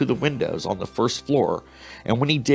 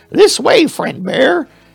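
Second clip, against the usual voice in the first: very high, creaky little mouse squeak; 7 dB louder than usual. Narrating a story, reading the mouse's line to the bear in a squeaky mouse voice. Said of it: "he squeaked".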